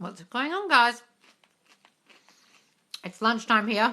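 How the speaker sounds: speaking with mouth full. A host greets viewers while eating lunch, talking while eating. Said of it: "Excuse me guys, eating my lunch".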